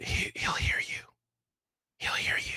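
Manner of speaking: speaking in a whisper. A character in a jail cell speaks to a newcomer in a game: whispering. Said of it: "why you are whispering inside of a jail cell".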